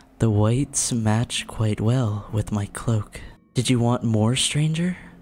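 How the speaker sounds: seductive character voice. Voicing the mad scientist's assistant greeting a stranger: seductive character voice. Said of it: "this is, like, seductive".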